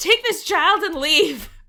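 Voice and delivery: mock-yelling. Recounting how a man yelled at the group, retelling a yell. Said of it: "he just yells at us".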